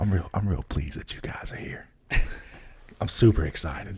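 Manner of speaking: mock, pretend whispering. Whispering a speech of welcome after being asked to: pretend whispering a speech. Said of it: "Imagine that whole thing you had to whisper".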